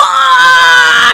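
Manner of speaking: very loud, high, drawn-out, raw scream. Showing how Angry Joe really reacts, Angry Joe impression. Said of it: "his more is like".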